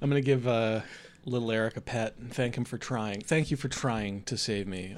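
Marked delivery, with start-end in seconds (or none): 3.2-5.0 condescending, patronizing, talking-down tone. Thanking the dog in character for trying to save him: condescending. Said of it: "it sounds like he said it in a really condescending way".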